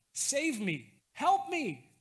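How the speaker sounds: high, loud, panicked desperate cry.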